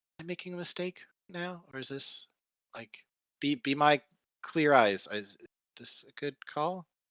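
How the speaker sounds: hushed whisper in character voice. Voicing a character asking a friend for advice: whispering in character. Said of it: "she's gonna whisper".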